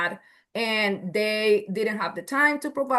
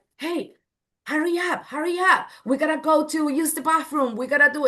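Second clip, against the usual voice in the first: pitched-up, hurried, nagging voice; 6 semitones higher than usual. Retelling what adults say to a slow-eating child: imitating rushing a child. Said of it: "we're rushing our kids".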